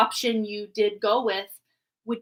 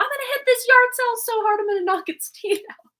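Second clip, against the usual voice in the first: mock very high shout, called out as across distance; 13 semitones higher, 3 dB louder than usual. Recalling yelling back across the street to mom and sister, retelling own yell. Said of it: "I yelled back to my mom and sister".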